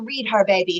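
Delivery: ordinary delivery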